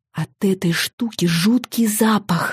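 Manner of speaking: faintest possible, barely audible half-whisper. [name] at the dinner table, answering Michael: half-whispering as quietly as possible. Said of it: "как можно тише прошептала я".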